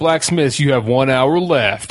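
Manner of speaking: big, powerful announcer host delivery. Retelling how a competition show host speaks: imitating a host's powerful voice. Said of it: "he speaks with this very powerful voice".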